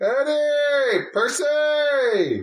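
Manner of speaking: very high yell, one word drawn out. Seeing specks coming down the road, a character calls out, yelling names. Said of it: "I yell".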